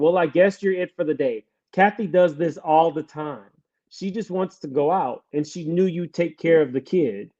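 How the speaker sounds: normal talking voice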